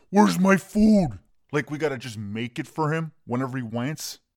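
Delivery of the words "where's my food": put-on high-pitched, demanding scream. Retelling how the fifteen-year-old comes out: imitating someone screaming. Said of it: "He starts screaming at everybody".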